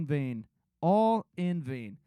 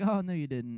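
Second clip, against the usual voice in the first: put-on dry sarcastic tone; 3 semitones lower than usual. Imagining the other speaker's reply to a phone call: Taylor's sarcastic reply, imitated. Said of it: "some sarcastic response like".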